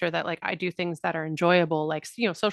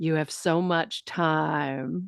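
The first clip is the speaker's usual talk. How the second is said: imitated, put-on whisper. Retelling what someone said into the speaker's ear at a party: retelling Julian Taylor's whisper. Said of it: "whispered in my ear".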